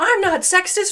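loud angry defensive tone.

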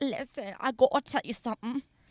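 silly, idiot-like talk. Retelling walking up to the priest and talking like an idiot. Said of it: "Talking like an idiot, right?".

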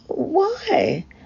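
very high, wavering, quavering voice. The narrator, realising they are in a dangerous position, quavering. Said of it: "I quavered".

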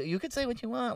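calm, laid-back, soft, low-key chill voice. Retelling what the man in the park said: imitating a low-key calm man. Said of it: "he talked like this".

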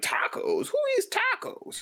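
mocking, high-pitched, slow, scoffing voice.

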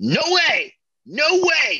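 slow, drawn-out, very high-pitched scream. Describing an intense scene, the speaker acts out her reply: imitating a character screaming. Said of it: "I'm sorry for screaming into the mic there".

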